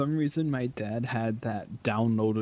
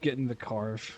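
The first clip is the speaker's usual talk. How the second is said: ordinary talk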